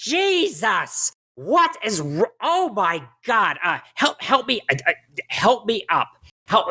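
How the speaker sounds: shrill, piercing, annoyed cry, drawn out. Game master voicing a halfling crying out from a corner, shrill, annoyed voice. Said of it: "a very shrill, annoyed voice".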